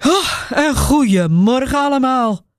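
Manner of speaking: tired, slow, sighing through the words. A tired man sinking onto a chair and greeting everyone, sighing. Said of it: "zucht hij".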